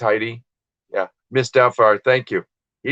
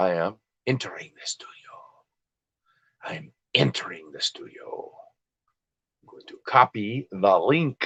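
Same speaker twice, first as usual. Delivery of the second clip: Russian and Greek accent; 9 dB quieter than usual. Opening StreamYard to let a guest in, in a Russian Greek accent. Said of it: "That was my Russian Greek accent".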